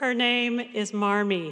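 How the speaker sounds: slow, very stern delivery. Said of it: "very sternly said".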